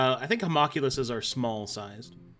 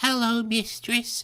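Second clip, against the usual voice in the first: put-on girl voice, much higher; 11 semitones higher than usual. Game master voicing a servant creature greeting its mistress: girl's voice. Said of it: "I can do a girl's voice".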